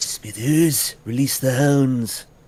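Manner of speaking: slow, drawn-out, deliberate drawl. Showing what sounding like Mister Burns means: Mister Burns voice. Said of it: "You sounded like Mister Burns".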